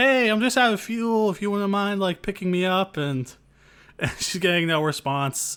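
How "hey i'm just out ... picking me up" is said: put-on nice voice, much higher pitched. Retelling Faye calling out to any passing ship, putting on a nice voice. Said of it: "she's putting on the nice voice".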